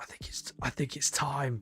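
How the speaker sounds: hushed, breathy, barely voiced whisper. Retelling what a woman said on walking in during his game: retold whisper. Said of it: "she just whispers it to me".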